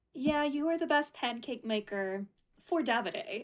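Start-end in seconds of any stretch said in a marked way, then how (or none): none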